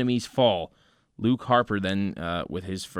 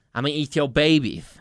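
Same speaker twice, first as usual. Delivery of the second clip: put-on lisping voice, higher; 5 semitones higher, 4 dB louder than usual. Comparing a wrestler's odd voice, doing a Mike Tyson impression with lisp. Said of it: "with his little lisp".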